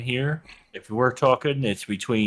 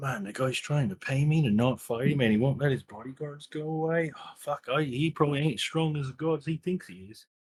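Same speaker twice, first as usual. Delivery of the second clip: hushed, quiet, private mutter under the breath; 3 semitones higher, 6 dB quieter than usual. Playing a character during a tense deal: muttering under breath. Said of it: "I'm gonna mutter under my breath".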